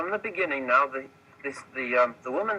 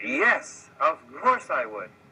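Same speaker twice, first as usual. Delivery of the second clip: slow, heartfelt, with real feeling. Leading a group in repeating a phrase, showing how it is said with feeling. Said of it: "you have to say it with feeling".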